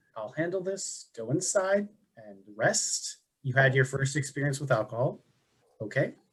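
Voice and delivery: soft half-whisper, acted in character. Half-whispering to Atash in character after leaning down: half-whispering in character. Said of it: "I'm gonna look at and whisper".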